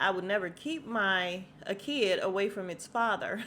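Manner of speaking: ordinary talk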